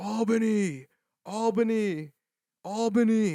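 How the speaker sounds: shrill, high, loud, repeated yelling. Telling a story about loading a truck, the speaker imitates the pickoff guy yelling. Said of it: "He's yelling".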